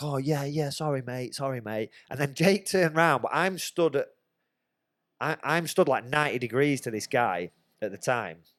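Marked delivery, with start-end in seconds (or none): 0.0-1.9 mock, really apologetic, backing-down tone. Retelling a fight, imitating a man who turned apologetic: imitating an apologetic man. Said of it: "he sorta went really apologetic, like".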